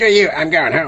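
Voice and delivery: squeaky cartoon voice. Describing a friend's habit during games, the speaker tries a Cartman voice. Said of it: "Mike always does a Cartman voice".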